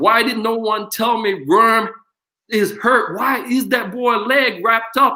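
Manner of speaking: high, drawn-out screaming. Retelling how the coach screamed from the stand at nationals, imitating a screaming coach. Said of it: "he's screaming like in at nationals".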